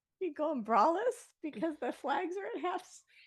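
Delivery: very high, laughing and giggling mid-sentence. Quoting a joke someone told, laughing while talking. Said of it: "say that again without laughing".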